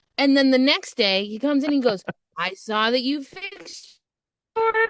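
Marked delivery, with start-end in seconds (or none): 2.4-4.9 overjoyed, cheery, sing-song happy dad voice. Telling a story, the speaker quotes the camping dad, imitating a very cheerful man. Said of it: "He's like the happiest camping dad".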